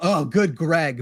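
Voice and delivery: fed-up, exasperated, upset outburst. Retelling what they say whenever upset: imitating own exasperated tone. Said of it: "whenever I'm upset, I literally go".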